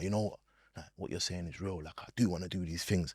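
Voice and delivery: very quiet, soft, hushed voice. Retelling what young people say when pulled aside: imitating someone speaking quietly. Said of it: "They speak quietly".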